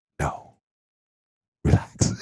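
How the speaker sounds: dead-serious, suddenly serious, joking dropped. Retelling a talk with a woman, the speaker quotes her reply in a mock-serious tone. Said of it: "she got serious".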